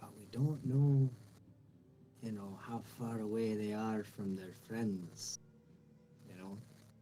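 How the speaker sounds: whispered voice. Whispering to a fellow adventurer that lizard folk wait in ambush: whispering in character. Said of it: "I guess I'll continue whispering".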